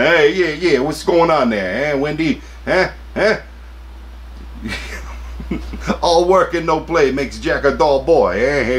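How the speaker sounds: high unhinged villain voice. Speaker slipping back into the voice mid-rant, Jack Torrance voice. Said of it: "maybe I should have done that voice".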